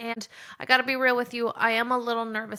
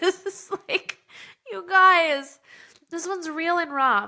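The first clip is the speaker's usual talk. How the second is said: crying, tearful, pitched-up voice; 6 semitones higher, 6 dB louder than usual. Podcast host telling listeners a raw personal story, crying. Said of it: "And I'm already crying".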